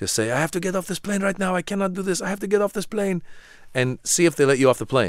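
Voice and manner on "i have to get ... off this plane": put-on thick Arabic accent, very high pitch. Telling a listener what to shout on a plane, in the thickest arabic accent. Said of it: "with your thickest Arabic accent".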